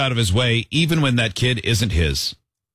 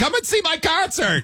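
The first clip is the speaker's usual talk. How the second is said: put-on very high childlike voice, slow and drawn out. Acting out a kid eating ice cream: imitating a kid's voice. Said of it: "now I've got the voice of the kid going".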